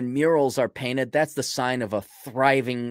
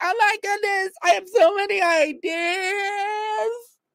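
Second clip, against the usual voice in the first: very high mock naive voice. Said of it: "You're like".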